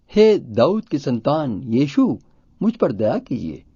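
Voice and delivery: ordinary talk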